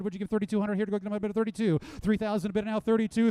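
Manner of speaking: fast, rapid auctioneer patter. Calling for bids at an auction, talking fast like an auctioneer. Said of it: "as we start talking fast like an auctioneer really would".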